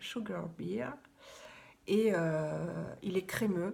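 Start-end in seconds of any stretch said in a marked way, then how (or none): 0.0-0.9 Sugar Beer said the English way, English accent. A presenter names a product; English accent. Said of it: "avec l'accent anglais".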